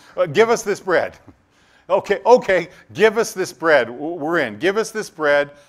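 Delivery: loud, high, eager pleading like a crowd.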